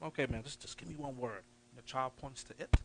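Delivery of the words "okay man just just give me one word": whisper, quieter. Acting out asking a struggling reader to point at a word: imitating a whisper. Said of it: "you're whispering 'cause you don't wanna embarrass them".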